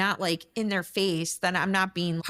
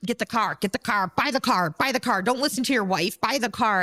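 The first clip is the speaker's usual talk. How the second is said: imitated aggressive salesman voice; 4 dB louder than usual. Describing a car salesman with walk-in customers, imitating an aggressive salesman. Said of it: "super aggressive".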